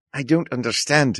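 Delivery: put-on New Zealand accent. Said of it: "the multiple accents that I threw out".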